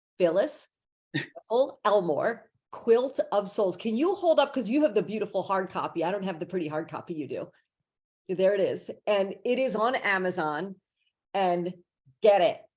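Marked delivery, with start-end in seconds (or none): 0.2-3.8 slow, careful delivery. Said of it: "I will say it slowly".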